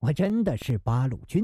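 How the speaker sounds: plain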